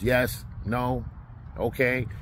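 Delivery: put-on flat delivery. Imitating a girl at work answering questions, in mock deadpan one-word answers. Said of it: "you get these deadpan, one-word answers".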